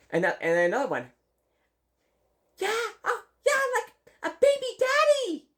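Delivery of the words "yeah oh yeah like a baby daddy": put-on very high little-kid voice. Retelling what a small child said, imitating a four-year-old. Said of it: "I can't really do the four-year-old voice".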